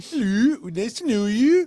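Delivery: high, cartoonish put-on Dutch accent. Asked to show a Dutch accent, greeting as Harry Van Kirk, Dutch accent like Frozen's spa guy. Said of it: "that's just like the spa guy from Frozen".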